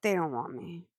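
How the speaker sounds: muttered, hushed half-whisper under the breath. Retelling how he half-whispers to himself after a line: imitating Chris D'Elia half-whispering. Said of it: "and he whispers to himself".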